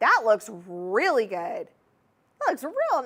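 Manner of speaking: Southern accent creeping through, slipping out, sing-song. Admiring a ring on a finger: Southern accent slipping out. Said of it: "my Southern accent was coming out there".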